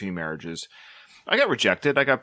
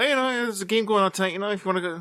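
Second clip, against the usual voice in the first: high, fast, casual and offhand. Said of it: "Just the way he kinda threw it".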